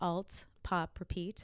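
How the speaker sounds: slow, careful repetition.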